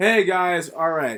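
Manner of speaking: bursting, loud, high shout. Opening a video to viewers: shouting. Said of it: "So sorry for shouting".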